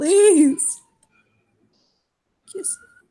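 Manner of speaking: whimpering, pleading tone. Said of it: "He whimpers at her".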